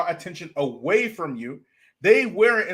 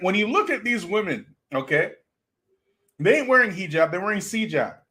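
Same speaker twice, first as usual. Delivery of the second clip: ordinary delivery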